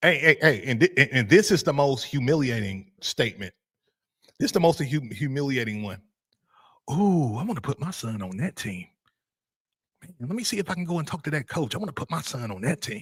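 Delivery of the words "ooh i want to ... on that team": hushed, half-whispered voice. Imitating parents wanting another coach's team: imitating a half-whispering parent. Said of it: "when you start hearing parents talk and whisper".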